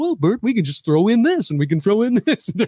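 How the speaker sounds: casual, high, easygoing voice. Describing Bert and Ernie, doing Ernie talking to Bert: casual Ernie voice. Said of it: "Ernie's just that casual guy that comes in and goes".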